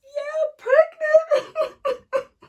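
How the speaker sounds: mock very loud, very high bawling wail. Retelling finding out she was pregnant: imitating own past crying. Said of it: "I was bawling, literally crying".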